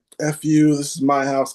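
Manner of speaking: mock furious, heated, angry insistent outburst. Retelling arguing with a man inside a rehab during a seizure, retelling a scream. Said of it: "I don't know why I'm screaming this".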